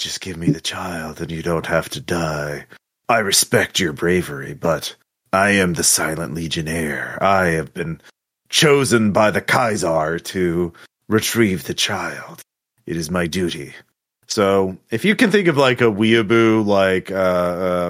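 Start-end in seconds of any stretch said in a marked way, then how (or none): 0.0-13.7 stoic, rugged, dutiful warrior voice. Voicing an armored swordsman on a cliff demanding the child: stoic Silent Legionnaire voice. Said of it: "he looks very stoic and, uh, rugged, and he says".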